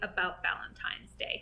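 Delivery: quick, unvoiced whisper.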